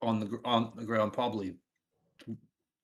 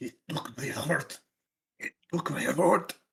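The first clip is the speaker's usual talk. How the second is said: grating, rough growl through gritted teeth; 3 semitones higher than usual. Playing a character fighting through the pain in a game: growled through gritted teeth. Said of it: "Through gritted teeth, Tyson just growls out".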